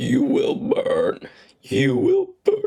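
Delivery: very high, rough, grating, slow piggish squeal. Showing a voice-acting take just recorded, in an almost pig-like voice. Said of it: "almost like a pig voice".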